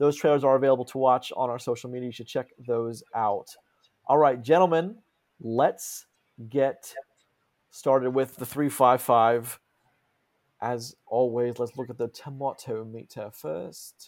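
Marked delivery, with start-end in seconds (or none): 10.6-14.1 faint, light British accent. Starting a film review segment, a host unintentionally slips into a British accent. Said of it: "Like I was British or something".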